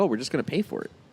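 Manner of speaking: ordinary talk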